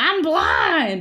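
loud, high, blurted, wailing scream. Retelling how a character in a show keeps screaming: imitating someone screaming. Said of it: "every few seconds screaming".

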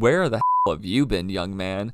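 ordinary talk

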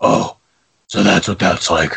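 gravelly superhero voice. Retelling a movie scene after Catwoman disappears: Batman voice. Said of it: "in Dark Knight Rises he does it to himself".

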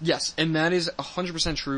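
plain

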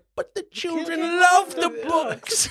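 high, slow sobbing voice. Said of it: "She's like".

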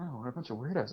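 muttering under breath. Game master voicing a character who mutters while walking off from the group: muttering. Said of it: "as he mutters".

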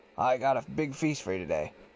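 plain

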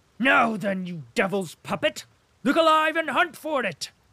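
very loud, rising threatening bellow. A man rushes threateningly at another man over a missing purse, shouting. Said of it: "Shouted Denisov".

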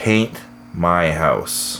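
slow, low, deliberate, each word spaced apart. Telling a joke, after the guy pays at the bar, the reply comes slowly. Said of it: "It says slowly".

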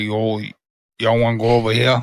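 put-on Cajun dude accent. Describing a TikTok man's speech, in a true Cajun accent. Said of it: "the true dude, Cajun accent".

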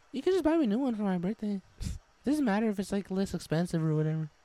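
put-on gentle, high-pitched girl voice. Role-playing the girl in a couple scene, talking to her babe, girl voice. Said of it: "the girl voice".

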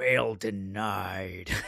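dark, sinister, low gravelly voice, "denied" drawn out. Speaker mimics a judge's ruling while discussing it, imitating a gravelly menacing judge. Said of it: "the gravelly menace in the judge's voice".

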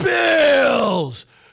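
slow, high, loud, drawn-out stadium announcer call.

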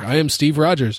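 flat, expressionless delivery. Recounting a favorite movie moment, quoting Captain America's deadpan line. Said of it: "He's just like deadpan".

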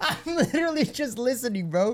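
laughing, drawn-out talk. Answering a friend who is telling a wedding story, laughing while talking. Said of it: "While you laugh".

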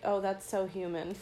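ordinary talk

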